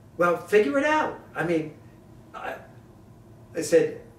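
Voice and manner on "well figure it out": very high, shrill, loud, put-on New York accent. Retelling what a woman said in reply, imitating her New York accent. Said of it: "she had a real New York accent".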